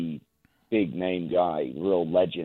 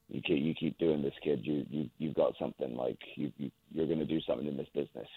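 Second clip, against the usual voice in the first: put-on quiet voice, lower pitch; 2 semitones lower, 8 dB quieter than usual. Retelling what a man said after pulling him close when he was nineteen, imitating someone speaking quietly. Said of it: "said very quietly".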